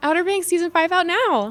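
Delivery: very high, loud, enthusiastic excited announcer delivery. Asked to say a show promo line several ways, first enthusiastically. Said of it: "First one enthusiastic".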